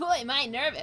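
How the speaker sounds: loud, belted cartoon hedgehog voice. Voicing a nervous game character's line again: Sonic voice. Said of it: "Maybe I'll give him a Sonic voice".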